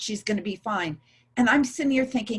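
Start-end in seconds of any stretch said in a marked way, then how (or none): none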